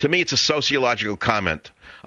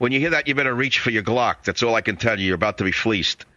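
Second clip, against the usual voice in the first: ordinary talk, nothing marked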